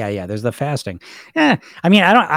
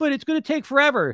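higher-pitched taunting bully voice. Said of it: "that bully voice".

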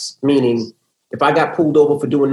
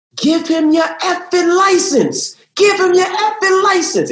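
very high, shrill, drawn-out yelling. Retelling a traffic stop with dad on speakerphone: imitating dad yelling. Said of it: "my dad yelling".

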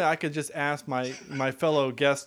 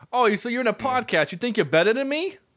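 loud put-on New Jersey accent, played up; 8 semitones higher, 5 dB louder than usual. Redoing another speaker's line after a request for an italian accent, put-on jersey accent. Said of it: "That's more Jersey than Italian".

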